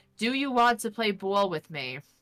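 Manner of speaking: put-on natural New York accent throughout. Retelling own words spoken to a game prompt: own New York-accented line. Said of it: "say ball without your accent".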